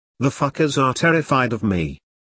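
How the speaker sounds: ordinary delivery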